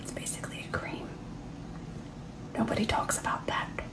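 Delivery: hushed, breathy, confiding whisper. Explaining blush blending into foundation during a makeup demo, whispering. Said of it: "I don't know why I'm whispering".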